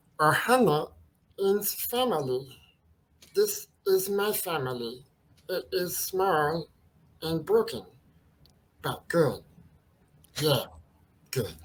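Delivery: put-on cartoon alien voice, fully committed. Asked to do a character, doing a complete imitation in a Stitch voice. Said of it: "asking for you to do Stitch".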